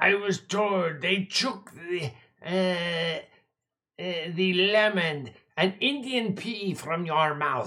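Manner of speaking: slow, put-on accusing character voice.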